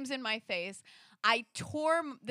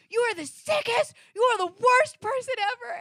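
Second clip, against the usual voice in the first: top-of-the-lungs shrill shriek, pitched way up; 13 semitones higher, 10 dB louder than usual. Recounting screaming back in his face, reenacting screaming as loud as possible. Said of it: "screamed as loud as I could".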